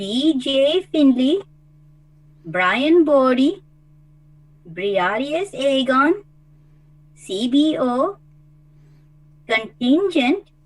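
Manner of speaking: slow, careful reading, one by one. Reading a list of names aloud after being asked to go slowly, reading slowly. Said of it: "I will try to read this slowly for you".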